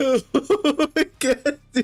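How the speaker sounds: very high voice, laughing to the point of tears. Reacting as the DM to a run of crit rolls, crying with laughter. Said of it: "I'm crying right now".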